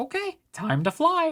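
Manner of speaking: tiny, very high, little voice. A player voicing Aegis, now three inches tall, in an Aegis character voice. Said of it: "I hate speaking like this".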